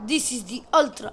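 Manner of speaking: accent of the Soviet region. Speaker introduces the Ultra Tank, in a Soviet accent. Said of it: "I'm talking in like a Soviet accent".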